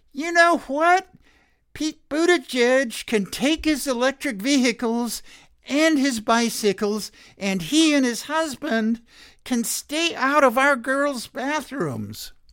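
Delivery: very high, squeaky whining voice. Doing an imitation of a woman: whiny high-pitched Marjorie Taylor Greene voice. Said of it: "in her whiny-ass, high-pitched voice".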